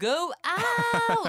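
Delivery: very high, loud yell, drawn out long. Reading out a listener's message about a late husband: imitating someone yelling. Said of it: "남편에게 소리쳤어요".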